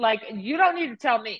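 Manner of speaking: plain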